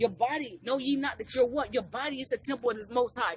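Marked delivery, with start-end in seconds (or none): none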